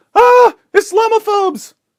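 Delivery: very high, very loud, shrill, piercing scream. Acting out the journalist screaming at us: imitating someone screaming. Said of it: "Then she comes to us and screams".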